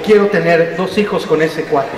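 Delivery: ordinary delivery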